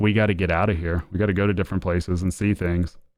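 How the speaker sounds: usual speaking voice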